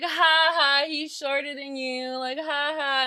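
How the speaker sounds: mock taunting "ha-ha" jeer, slow and drawn-out. Retelling how a boy taunted her boyfriend: imitating mocking laughter. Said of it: "he was just laughing at us".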